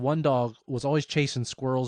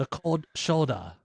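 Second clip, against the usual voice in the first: half-hearted, weak put-on Russian accent; 3 semitones higher than usual. Asked to repeat a phrase just as a man said it, trying a Russian accent. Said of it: "It didn't sound very Russian".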